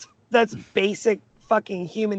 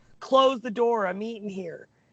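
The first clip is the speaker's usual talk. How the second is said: put-on light, mild yell in an old man voice; 2 semitones higher than usual. Telling a story, the speaker acts out an old man retelling an old man's yell. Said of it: "The old man yells".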